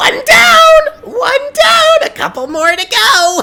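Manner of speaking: very high, very loud, gleeful, shrill goblin shout. Voicing a goblin cheering after a hero falls: gleeful goblin voice. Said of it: "you hear Vati specifically, uh, them say".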